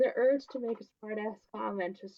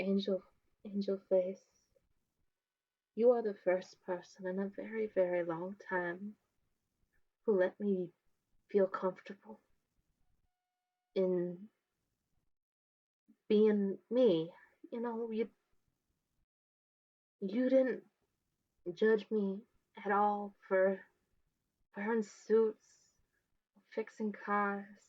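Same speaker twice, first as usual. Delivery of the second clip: put-on lowered voice; 2 semitones lower than usual. Acting out what a woman will say to the listener, imitating a lowered voice. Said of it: "she's gonna lower her voice".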